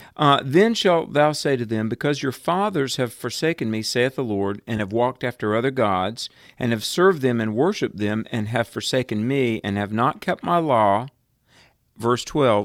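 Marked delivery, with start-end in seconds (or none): none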